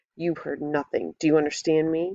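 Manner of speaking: mean, hissed through the teeth. A man grips the narrator's throat beside another tent, hissing. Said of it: "He hisses".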